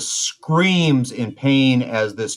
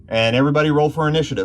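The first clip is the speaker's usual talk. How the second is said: ordinary talk, nothing marked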